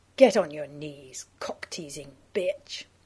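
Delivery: rough and thick voice. Reading a story, one character commands the narrator, in a rough, thick voice. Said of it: "You say in a rough, thick voice".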